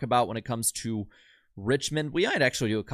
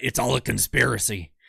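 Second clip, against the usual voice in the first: put-on, agitated ranting voice. Reacting to a super chat about shenanigans: Alex Jones impression. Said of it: "the best Alex Jones impression I'll do".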